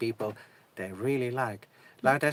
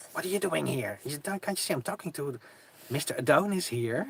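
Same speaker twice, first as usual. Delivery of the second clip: sharp, hissed words; 3 semitones higher than usual. Retelling how a woman spoke to him after he came out of the van: retelling her hissing. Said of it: "she hissed at me like".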